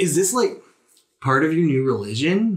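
baffled, bewildered, very confused, pitched high. Voicing a guard who was just hugged unexpectedly: confused. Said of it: "Swoops seems super confused".

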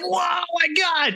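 very high, slow, drawn-out, awed gasp.

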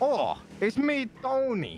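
put-on Italian accent, very high, slow. Retelling how he showed the accent he was going to use: put-on italian accent. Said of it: "he sounded so Italian".

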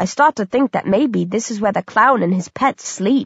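ordinary delivery

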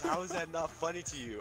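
put-on uncontrollable laughter. Retelling what a woman said while cracking up, imitating uncontrollable laughing. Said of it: "She couldn't control herself".

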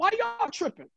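high-pitched indignant, pushing back tone.

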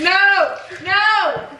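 startled shouting. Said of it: "You scared my sneeze away!".

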